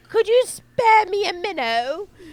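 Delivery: high, loud, slow, pleading British urchin voice.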